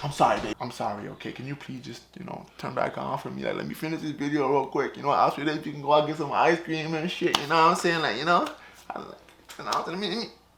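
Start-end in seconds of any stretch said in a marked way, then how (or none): 0.0-7.4 low, sweet-talking, nice and gentle coaxing. Struggling with a light that won't turn back on, talking to it: nice and gentle coaxing. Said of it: "I have to be nice and gentle".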